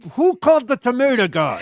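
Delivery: high, furious, enraged voice. Acting out him turning to his assistant: imitating someone enraged. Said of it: "with rage in his eyes".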